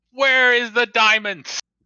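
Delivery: furious, angry screaming yell. A player voicing a goblin in a tabletop game, yelling and screaming. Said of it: "as he yells and screams at her".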